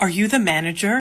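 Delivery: imitated very concerned female voice. Retelling a woman who asked for the manager, in a mock-concerned tone. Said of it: "very concerned".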